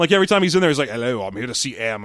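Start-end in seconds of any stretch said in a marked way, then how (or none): 0.9-2.0 put-on low, soft British accent. Mocking the Bond and Moneypenny scenes, the speaker does Bond's British accent. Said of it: "I'm trying to do a different British accent".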